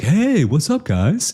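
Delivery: acted-out easygoing, laid-back tone, very high pitch. Acting out how he greeted them, imitating a laid-back greeting. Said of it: "that sort of great laid back".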